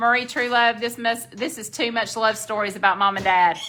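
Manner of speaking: ordinary talk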